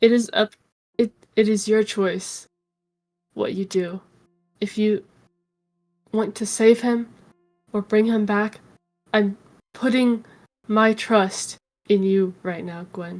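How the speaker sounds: whispering in character. Voicing a character who passes a dagger to gwen: whispering in character. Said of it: "And I'm gonna whisper to Gwen".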